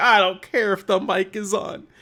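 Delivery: put-on, high, tearful, drawn-out sobbing, crying voice. Retelling what crying enemy creatures say in a game: imitating crying creatures. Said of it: "it's just them crying".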